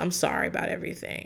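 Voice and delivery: quick, quiet, unwilling mumbling.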